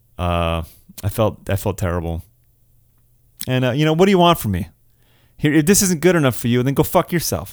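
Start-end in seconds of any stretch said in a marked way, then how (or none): 4.0-7.5 over-the-top, put-on defensive outburst. Apologizing to viewers for a spoiler slip, then turning mock defensive. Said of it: "James, why are you getting defensive?".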